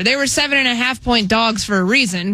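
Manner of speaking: ordinary talk, nothing marked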